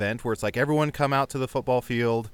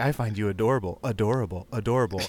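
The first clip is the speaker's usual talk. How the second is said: sultry, seductive, sensual put-on voice. Retelling a woman's line in a video being rewound: imitating a sensual voice. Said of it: "the most sensual voice".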